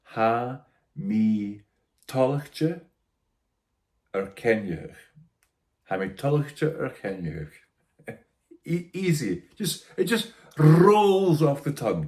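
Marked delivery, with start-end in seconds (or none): 0.1-7.5 careful teaching pace, very slow, syllable by syllable. Teaching a listener to pronounce two phrases, repeating them once more slowly. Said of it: "Slowly once more".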